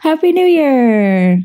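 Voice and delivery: spoken through a yawn, Year drawn out. Podcast co-host wishing everybody a happy new year, said through a yawn. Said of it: "[name] said that through a yawn".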